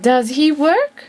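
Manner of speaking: pitch climbs on the last word work. Teaching intonation for yes-no questions: rising intonation on work. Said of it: "A rising intonation".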